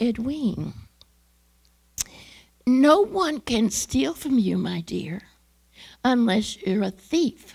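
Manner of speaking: gentle, calm, sweet teacher voice, drawn out. Retelling what the speaker's teacher said to them, imitating a calm, sweet voice. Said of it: "with a calm, sweet voice that she always had".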